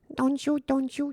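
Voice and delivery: very high-pitched, girlish put-on girl voice. Describing a game's girl voice coming through the mic, imitating a girl's voice. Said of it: "ça fait la voix de la fille".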